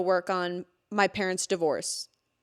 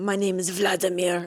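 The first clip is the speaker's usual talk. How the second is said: put-on vampire voice. Telling a friend about a pale guy met on arrival; imitating Vladimir's vampire voice. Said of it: "would talk like this".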